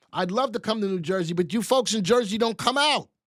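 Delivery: hollering call-out. Speaker asking listeners to come out and support this, yelling. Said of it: "Yes, I'm yelling".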